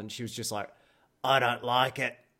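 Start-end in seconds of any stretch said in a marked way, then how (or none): 1.2-2.1 loud woman's voice like a chain smoker. Retelling a workshop onlooker's remark in a Selma and Patty voice. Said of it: "reminded me of, Selma and Patty out of The Simpsons".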